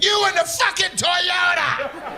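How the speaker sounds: high, slow, drawn-out mock yell.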